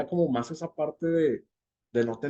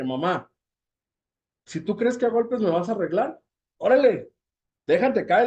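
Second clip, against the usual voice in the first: loud, raging, defiant, furious, pitched-up voice; 7 semitones higher, 5 dB louder than usual. Retelling what they said to their mother as a teenager, retelling a furious retort. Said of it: "con mucha furia, con mucha ira".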